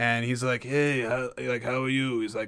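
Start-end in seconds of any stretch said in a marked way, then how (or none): 0.6-2.2 acted sinister gangster voice. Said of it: "mafioso, creepy stereotype that he does".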